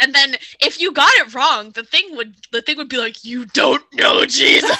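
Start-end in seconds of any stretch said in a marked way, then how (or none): 3.2-4.8 thunderous, booming, frightening voice. Retelling what a childhood computer game said after a wrong answer: imitating a big booming scary voice. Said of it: "the big booming scary voice".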